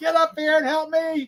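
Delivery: put-on very high, childish scream like a three-year-old. Retelling a midnight storm moment, calling for help: imitating screaming like a three-year-old. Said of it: "I was screaming like a three-year-old".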